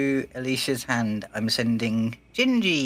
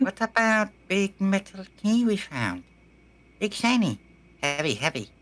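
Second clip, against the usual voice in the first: higher put-on monkey character voice; 8 semitones higher than usual. Speaking in character to the party about a found key: put-on monkey character voice. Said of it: "I've got to do the voice again".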